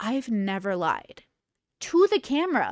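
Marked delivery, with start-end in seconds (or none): 0.0-1.2 flat, expressionless, dead-level deadpan. Imitating Christine speaking to the camera: deadpan Christine impression. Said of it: "And then straight deadpan".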